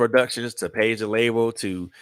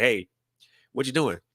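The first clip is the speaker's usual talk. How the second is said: mock tough-love, pushy tone; 3 semitones higher than usual. Acting out a supportive friend pushing you to keep going: imitating a friend pushing you. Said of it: "people in your corner that's gonna be like".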